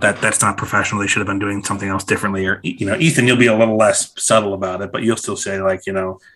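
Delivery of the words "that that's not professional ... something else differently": put-on mutter, lower and faster. Describing going to restaurants with friends, the speaker acts out Colin muttering under his breath. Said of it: "like under his breath like".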